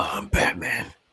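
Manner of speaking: low, deep, breathy whisper. Describing someone's deep voice, the speaker demonstrates a deep Batman voice. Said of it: "that deep voice where he can just be like".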